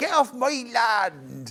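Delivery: put-on West Country Somerset accent. Retelling Charlie's attempt at a Yorkshire accent, imitating Charlie's Somerset accent. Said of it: "that's Somerset".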